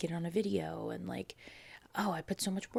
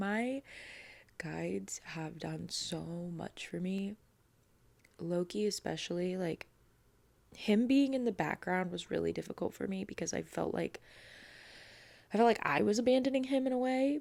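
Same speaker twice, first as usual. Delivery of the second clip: crying, voice breaking mid-sentence. Thanking viewers and their spiritual guides, the speaker is crying while talking. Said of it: "I'm trying not to cry and I'm crying".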